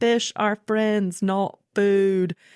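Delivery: animated cartoon shark character voice. Parent talking about favorite Pixar movies, doing the Finding Nemo shark impression. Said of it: "my best impression of the shark from Finding Nemo".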